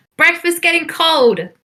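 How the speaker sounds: shrill, high, hollered yell with projected voice. Acting out Allstate's call in a story, Allstate yelling. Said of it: "You hear Allstate yell".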